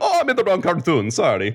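high, swooping, bouncy cartoon Italian accent. After a failed try at an Italian accent, play Mario dropped into the wrong cartoon, Mario voice. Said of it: "sounds like Mario dropped into the wrong cartoon".

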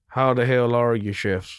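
drawn-out Western drawl with stretched vowels. Retelling a man's greeting to the chefs, in a John Wayne drawl. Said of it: "speaking in a Western drawl".

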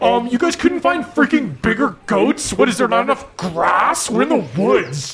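high-pitched complaint, chewing while talking. Voicing a princess eating goats, complaining between bites: princess complaining between bites. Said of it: "in between bites, just going like".

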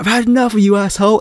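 sudden put-on shout, full force. Describing a video game moment, retelling Wei Shen's shout. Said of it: "Wei Shen just shouts".

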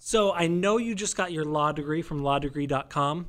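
ordinary talk, nothing marked

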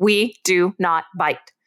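stern, firm, no-nonsense voice that means business. Showing the rebuke to give up close, stern but not yelling. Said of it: "In a stern voice, but not yelling".

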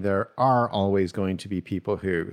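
ordinary delivery

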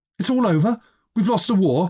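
very high-pitched, halting, stammered words. Narrator reading a boy's line in a story, stammering. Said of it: "stammered Hubert".

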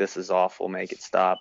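ordinary delivery

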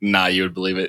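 ordinary delivery

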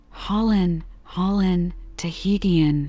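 ordinary delivery

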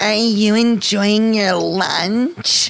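slow, mocking, affected camp lilt, "lunch" stretched.

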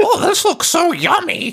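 ridiculous, very high squirrel squeak voice. Describing a skit's narrating squirrel, quoting it in an absurd squirrel voice. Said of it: "this fucking absurd squirrel voice".

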